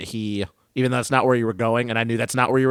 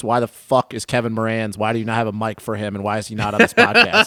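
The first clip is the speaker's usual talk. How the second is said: ordinary delivery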